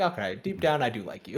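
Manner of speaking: normal talking voice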